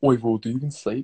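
affected low, deep voice. Talking with friends, a speaker suddenly switches to a put-on deep voice. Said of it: "why you chose to put such a deep voice on".

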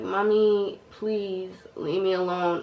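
mock drowsy, flat, slow, worn-out voice. Retelling telling their mommy to leave them alone, the speaker acts out a tired voice. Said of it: "This is probably how I sounded too because I'm tired".

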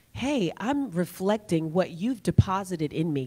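usual speaking voice

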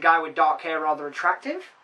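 ordinary delivery

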